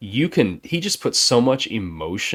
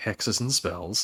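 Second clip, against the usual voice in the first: put-on nonchalant tone, quieter; 7 dB quieter than usual. Retelling a movie scene where Morticia names her major: imitating Morticia nonchalantly. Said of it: "just very nonchalantly".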